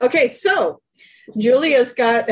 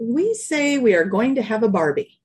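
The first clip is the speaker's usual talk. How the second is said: usual speaking voice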